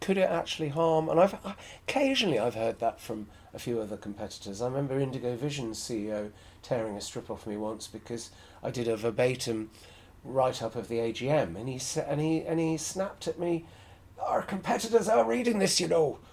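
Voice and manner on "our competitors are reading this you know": high, loud attempted Scottish accent. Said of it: "it was an attempt at Scottish".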